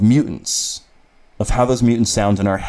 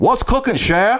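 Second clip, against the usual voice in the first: very high put-on comic-book character voice; 13 semitones higher than usual. Guessing-game impression of a character: Gambit voice. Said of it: "her husband, Gambit".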